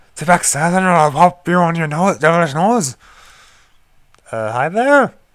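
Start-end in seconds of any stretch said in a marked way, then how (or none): 0.1-2.9 very bad put-on Irish accent. Reading the game's text aloud in a very bad Irish accent. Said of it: "saying it in a very bad Irish accent".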